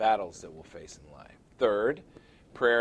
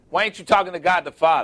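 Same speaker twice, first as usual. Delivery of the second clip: loud, fast, exasperated delivery. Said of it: "I'm sitting over there going".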